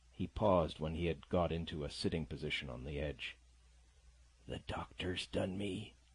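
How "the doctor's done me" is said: feeble, weak, soft murmur. A weakened man, sitting up on the edge, speaks to the narrator in a weak murmur. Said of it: "he murmured".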